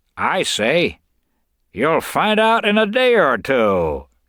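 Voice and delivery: loud, very high-pitched, jeering, mocking voice. The narrator reads a line spoken to a man just locked behind a door: mocking. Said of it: "came the mocking voice".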